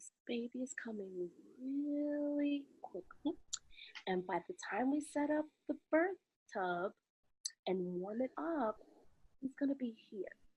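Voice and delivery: very soft half-whisper, close and intimate. Retelling what Sarah half-whispered in the speaker's ear during a birth: imitating a half-whisper. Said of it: "she whispers in my ear".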